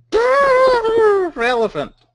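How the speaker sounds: very high, slow, elephant-like trumpeting cry.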